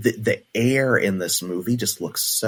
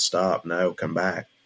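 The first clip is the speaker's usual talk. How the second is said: flat monotone, nonchalant and unbothered; 3 semitones lower than usual. Comparing a character to Willy Wonka: Gene Wilder Willy Wonka monotone. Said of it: "with Gene Wilder's, there's monotone".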